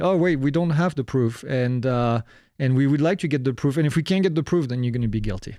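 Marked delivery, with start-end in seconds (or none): none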